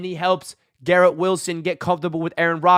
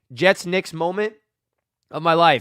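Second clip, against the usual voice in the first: ordinary delivery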